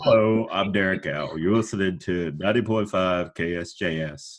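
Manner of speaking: funny, deep, low radio announcer delivery. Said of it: "I always like do a funny [name] impression".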